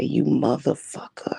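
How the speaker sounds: imitated growled voice. Retelling a confrontation with the father: imitating a growl. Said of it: "And I start growling at him".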